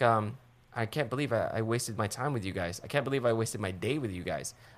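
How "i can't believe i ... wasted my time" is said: plain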